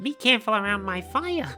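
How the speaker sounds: high-pitched creature voice. Playing a Pokemon game, voicing a Pokemon as in the anime: Charmander voice. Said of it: "It's the same fucking voice, just higher pitched".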